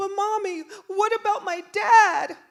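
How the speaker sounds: mock shrill crying child voice, tearful, very high, loud. Retelling what a crying son said: imitating a crying child. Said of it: "and he's crying".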